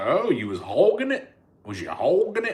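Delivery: teasing, overdone, mocking Southern accent, high, swooping. Retelling a video that mocked her accent: mocking her southern accent. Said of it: "I was making fun of her accent".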